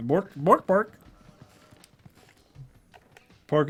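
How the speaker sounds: goofy, silly pig character voice. Doing one of your favorite silly voices: pork-in-space voice. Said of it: "I love that pork, pork in space voice".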